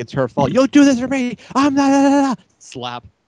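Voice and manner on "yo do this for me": mock heated yelling at a very high pitch. Retelling a fight where a man yells at a woman, retelling angry yelling. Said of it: "he's yelling at her".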